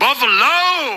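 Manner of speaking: very high, drawn-out, stretched word with stank attitude. Retelling a wrestler's entrance in front of the crowd: imitating Roman Reigns with stank. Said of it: "there was some stank in that voice".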